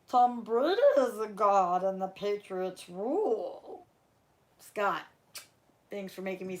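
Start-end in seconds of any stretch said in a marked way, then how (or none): 0.1-3.8 slow character voice with rule drawn out. Reading a viewer's super chat aloud, in the Yoda voice. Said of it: "Yoda voice, please".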